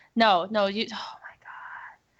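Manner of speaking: soft, slow, embarrassed whisper.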